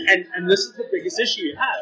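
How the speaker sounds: ordinary talk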